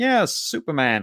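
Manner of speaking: put-on nasal British accent. Imitating an actor greeting Superman in a scene: Michael York's nasal British voice. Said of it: "with that great British kind of nasally voice that he has".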